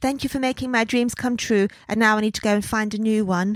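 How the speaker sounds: mock-melancholy haunted Victorian child voice. Quoting what she said on signing off, in a mock-melancholy haunted victorian child voice. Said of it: "she's not a haunted Victorian child".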